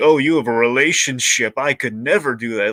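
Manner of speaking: put-on condescension. Mimicking a stereotyped TV strong-woman character, mock-condescending. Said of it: "gonna look down on".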